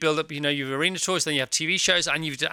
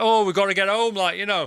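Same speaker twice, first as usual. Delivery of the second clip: put-on British trucker's accent, different voice; 3 semitones higher, 3 dB louder than usual. Quoting the British lorry driver's line, in a put-on lorry driver accent. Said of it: "you put on a different accent for the British lorry driver".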